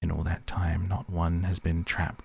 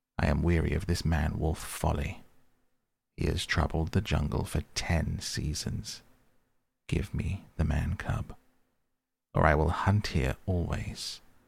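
plain

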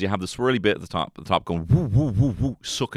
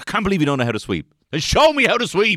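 frustrated voice, higher and louder; 11 semitones higher, 5 dB louder than usual. Retelling what the dad said about sweeping: imitating a frustrated dad. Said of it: "My dad would get frustrated being like".

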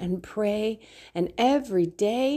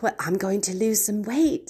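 put-on valley girl voice in a British accent. Speaker acts out making New Year's resolutions; UK valley girl voice. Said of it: "That was like a UK valley girl".

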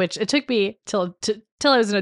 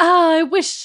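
over-the-top, very high, loud, overdramatic cry; 10 semitones higher, 5 dB louder than usual. Retelling a film scene where her brother cries: imitating Sarah being overdramatic. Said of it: "she's being so dramatic".

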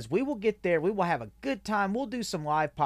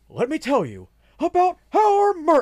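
very high, very loud, booming, swooping wrestling announcer voice; 10 semitones higher, 10 dB louder than usual. Asked to plug the merch to listeners, launching in with a wrestling announcer voice. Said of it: "that's wrestling announcer".

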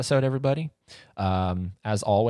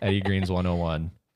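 ordinary delivery

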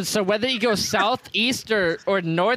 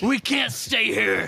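screaming slowly and loudly. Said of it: "I scream to Daigle".

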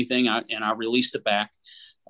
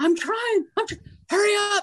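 mock yell, much higher pitch. Telling how a woman yelled back while climbing a rock ledge: retelling her yell. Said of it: "And she's yelling".

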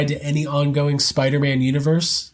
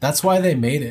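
mock deadpan delivery. Retelling a man's reply to his friend's comment, retelling a deadpan reply. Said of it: "Robert looked at him deadpan and goes".

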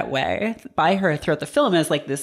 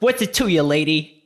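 curt, guarded, short delivery. Retelling Macaulay brushing off a woman trying to talk to him at dinner: imitating Macaulay, curt and guarded. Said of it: "almost a parody of a person being on their guard".

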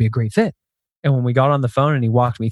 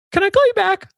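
really high-pitched, raised voice. Retelling own question on a phone call: really high-pitched voice. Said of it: "In a really high-pitched voice".

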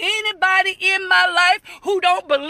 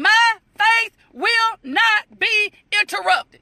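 each syllable spaced apart, one beat each. Speaker shows how he's saying it, like old-school discipline, syllable by syllable. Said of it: "So I'm saying like this".

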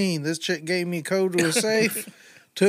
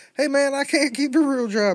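laid-back, pitched-up, put-on hillbilly accent; 8 semitones higher than usual. Imagining how a gentleman robber would talk, in a hillbilly voice. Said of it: "this guy just sounds like just a hillbilly".

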